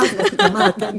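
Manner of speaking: high-pitched, laughing, teasing delivery.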